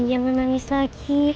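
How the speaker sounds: ordinary delivery, nothing marked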